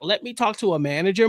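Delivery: plain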